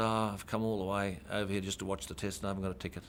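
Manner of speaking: ordinary talk, nothing marked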